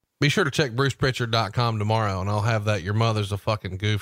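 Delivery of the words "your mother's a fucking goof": normal talking voice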